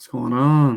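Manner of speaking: slow, terrible sick-sounding voice. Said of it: "Sorry, my voice sounds terrible".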